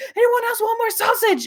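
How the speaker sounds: loud, frantic, high-pitched voice. Retelling a video of her mom cleaning up supper, imitating mom raising her voice. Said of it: "raising her voice".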